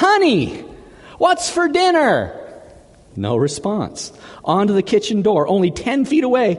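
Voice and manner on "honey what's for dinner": high, slow shout. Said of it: "He starts shouting".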